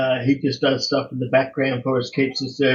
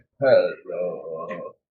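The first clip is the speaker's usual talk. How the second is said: mock croaky frog-in-throat voice, lower; 7 semitones lower than usual. Imitating how the other speaker just said hello: imitating a frog-in-throat hello. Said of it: "You went".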